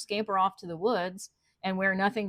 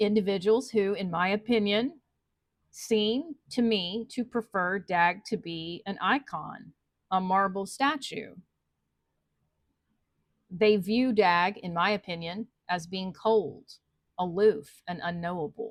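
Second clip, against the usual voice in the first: very slow, careful, methodical, word by word. Speaker discussing dag's legacy, not wanting to put a foot wrong, very slow and methodical. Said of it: "I'm having to speak very slowly and methodically here".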